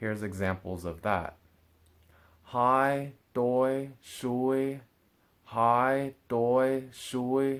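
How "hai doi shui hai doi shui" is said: very slow high level tone on hai, doi, shui. Demonstrating words marked with tone number 1, say it with high level pitch. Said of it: "it has to be said in a high tone".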